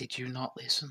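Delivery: hushed stage whisper. Answering a party member in character, stage whispering. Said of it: "she is stage whispering".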